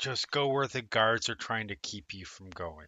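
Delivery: voice dropped down low and hushed. Narrating a scene, the speaker voices a character giving directions upstairs: lowered voice. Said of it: "sort of lowers her voice and goes".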